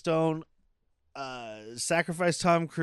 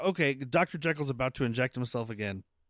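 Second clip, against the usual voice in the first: plain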